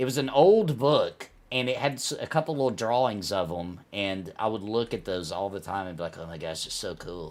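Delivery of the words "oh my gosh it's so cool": put-on amazed, marveling, awestruck gush in a young child's voice. Retelling how he looked at drawings in an old book: imitating his younger self in awe. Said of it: "voice you just did".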